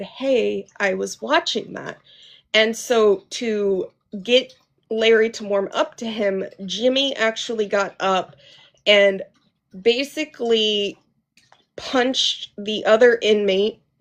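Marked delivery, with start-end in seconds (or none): 0.0-2.0 low, quiet whisper. Retelling what an inmate said when the channel changed: imitating a low whisper. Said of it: "in a low whisper had actually said".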